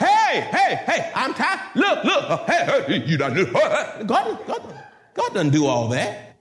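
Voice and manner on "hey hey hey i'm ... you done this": pretend yelling, higher. Showing how God would not shout at someone: mock shouting. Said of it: "God's not gonna shout".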